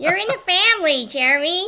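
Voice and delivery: high projected voice. Quoting a cartoon character during a food tier list: Lisa Simpson voice. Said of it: "As Lisa Simpson would say".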